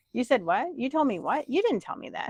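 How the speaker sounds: clueless, oblivious, not-listening voice. Retelling how a husband who doesn't listen replies: imitating husband who doesn't listen. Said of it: "My husband doesn't listen at all. He just like".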